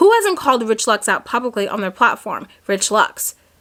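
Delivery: ordinary delivery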